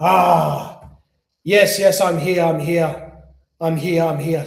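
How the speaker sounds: very slow jinn voice, long drawn-out "Ah". Retelling how the jinn spoke through a patient: imitating a jinn's voice. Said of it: "it's clearly it's not in a woman's voice".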